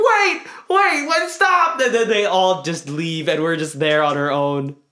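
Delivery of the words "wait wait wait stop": very high shout, stretched out. Recalling yelling to family about to go inside the Taj Mahal, retelling a shout. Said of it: "we're like yelling".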